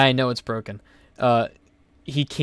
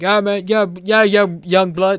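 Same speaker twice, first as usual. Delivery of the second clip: loud speech with slack, numb-sounding bottom lip; 7 semitones higher, 6 dB louder than usual. Retelling a man's greeting while waiting for the bike, imitating slack bottom-lip speech. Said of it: "He talks like his bottom lip doesn't work".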